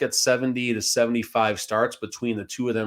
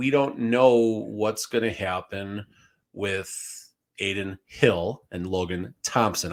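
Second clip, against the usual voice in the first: slow, deliberate, each word carefully spaced out; 3 semitones lower than usual. Speaker tells listeners about two players' names he keeps mixing up, said slowly. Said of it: "I said that slowly".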